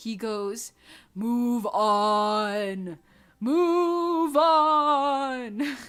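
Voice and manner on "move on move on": very slow, eerie, drawn-out, creepy loudspeaker voice. Retelling what a man said over the loudspeaker during a puzzle, imitating a creepy voice. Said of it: "in like a creepy voice".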